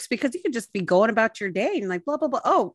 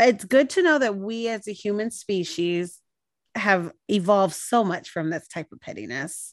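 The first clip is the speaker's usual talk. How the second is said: ordinary delivery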